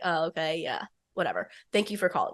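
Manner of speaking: soft, teasing, joking, offhand, dismissive tone, acted out. Retelling his reply to her, imitating him jokingly dismissive. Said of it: "jokingly like rolls his eyes and is like".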